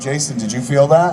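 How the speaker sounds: ordinary talk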